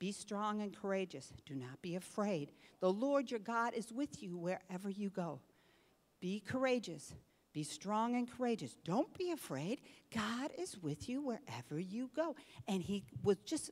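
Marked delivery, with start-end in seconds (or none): 0.0-12.3 imitated whisper. Retelling what a preschooler kept repeating to himself: imitating a whisper. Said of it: "he's whispering".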